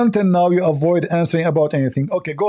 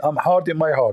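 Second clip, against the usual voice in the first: ordinary talk, nothing marked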